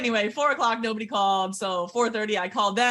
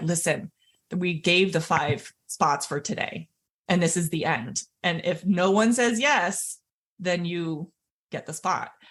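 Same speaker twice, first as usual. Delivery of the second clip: normal talking voice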